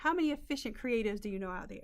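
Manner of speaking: normal talking voice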